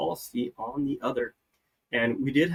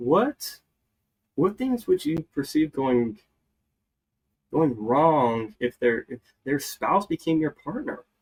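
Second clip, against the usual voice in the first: worried, concerned, almost confused tone. Showing listeners how to ask a business partner this question, in a concerned, confused tone. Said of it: "in this very kind of concerned, almost like confused type tone of voice".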